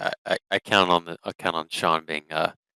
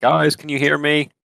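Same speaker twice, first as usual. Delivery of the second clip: very high-pitched, carrying shout; 9 semitones higher, 5 dB louder than usual. Player's character calls to two companions far away: shouting to distant friends. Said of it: "I'm gonna shout to uh Rashawn".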